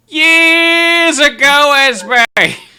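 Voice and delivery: put-on very high, very loud, shrill old man's hollering shout. Voicing an old man shouting back about the tavern: old man shouting. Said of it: "the old man shouts back".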